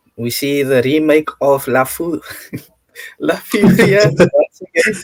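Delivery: words broken up by laughter throughout. Asked by a co-host to preview the next league, the speaker laughs while talking. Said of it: "I'm sorry for laughing".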